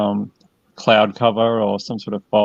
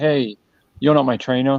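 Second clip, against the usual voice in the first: mock angry penguin voice, pitched higher; 4 semitones higher than usual. Retelling how a touched penguin turned around: imitating an angry penguin. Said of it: "he was, like, really angry about it".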